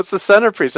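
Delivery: high, loud, protesting voice.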